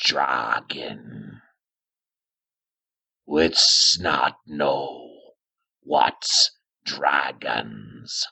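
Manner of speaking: very low cave-creature troglodyte voice. Voicing a troglodyte that speaks to a player: troglodyte voice. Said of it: "And it says to you".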